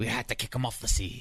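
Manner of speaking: put-on pirate-sounding Australian accent. Imitating boat crews remembering a shipmate: australian accent slipping into pirate. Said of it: "I turned a pirate instead of an Australian there".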